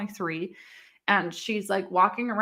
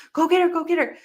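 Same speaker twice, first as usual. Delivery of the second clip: acted-out panicked scream, much higher, louder; 9 semitones higher, 5 dB louder than usual. Retelling the moment the landlord ran to grab the baby, retelling a panicked scream. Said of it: "we were just screaming".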